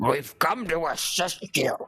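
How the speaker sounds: slow, high, otherworldly eldritch demon voice. Planning a game fight, showing how a second creature will speak, Eldritch demon voice. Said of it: "some one of the Eldritch demons".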